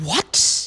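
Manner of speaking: high, sarcastic fake shock with a know-it-all tone. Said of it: "you could be super sarcastic and be like".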